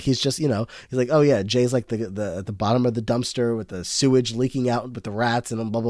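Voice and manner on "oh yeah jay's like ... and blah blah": usual speaking voice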